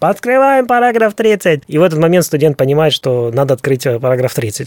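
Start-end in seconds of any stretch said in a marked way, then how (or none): 0.0-1.6 high, shrill hollering, projected loudly. Explaining how a woman relays a professor's instructions to a student, retelling a yell. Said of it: "Вот она начинает орать".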